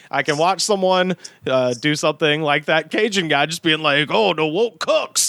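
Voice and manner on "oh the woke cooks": rough, creaky cartoon alligator voice with swampy critter sound. Retelling what a cajun guy said: imitating a cartoon alligator voice. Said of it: "he just said that sounding like a cartoon alligator".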